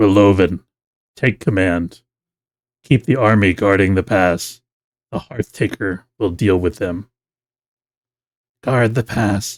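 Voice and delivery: voice sitting down deep and low. A game master voices an unseen liege giving orders to Relovin: deep voice. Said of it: "You hear a deep voice".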